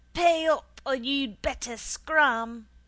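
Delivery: menacing, loud, slow, threatening shout. A conjurer spots the narrator at his circle, shouting threateningly. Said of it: "he shouted out threateningly".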